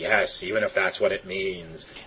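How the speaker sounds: very low, deep comic villain voice. Quoting Freeze in a round of cartoon impressions: Mr. Freeze impression. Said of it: "The impressions".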